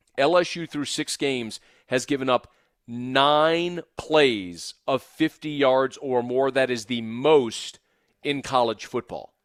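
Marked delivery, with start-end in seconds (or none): 0.2-6.5 slow, measured, every word spelled out, "nine" drawn out. Repeating a statistic about big plays given up, said slowly. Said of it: "Let me say that again slowly".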